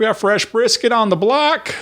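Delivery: very high shouted hawker's holler. Retelling what people at Buc-ee's were yelling at 5 a.m., imitating someone yelling. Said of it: "they're on there yelling".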